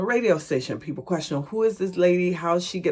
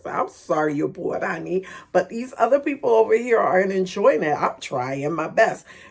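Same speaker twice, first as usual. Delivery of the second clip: mock sarcastic, facetious, insincere delivery; 3 semitones higher, 4 dB louder than usual. Retelling a reply to a heckler: imitating own sarcastic reply. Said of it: "I was being facetious".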